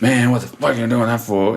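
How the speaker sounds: aggressive, confrontational, fast, hostile tone. Contrasting people's curious voices with a hostile one, mock-hostile tone. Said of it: "It's not that".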